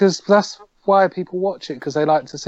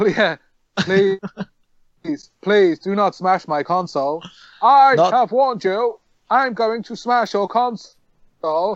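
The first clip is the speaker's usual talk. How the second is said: robotic alien voice, much higher pitch; 4 semitones higher than usual. Retelling what a boy said to his parent, in a Dalek voice. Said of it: "Is that a Dalek?".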